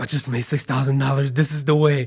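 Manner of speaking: acted crying while speaking. Retelling calling mom on the way home, the speaker reenacts a tearful phone call. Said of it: "I'm like crying on the phone".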